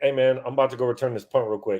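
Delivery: ordinary talk, nothing marked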